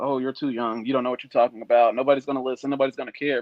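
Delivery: ordinary talk, nothing marked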